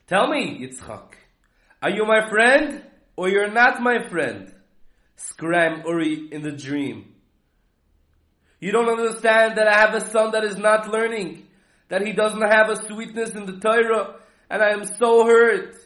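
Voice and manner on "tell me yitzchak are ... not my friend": put-on higher tone. Retelling a dream in which Uri speaks to Yitzchak, acting out a higher tone. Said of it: "he's coming with a higher tone".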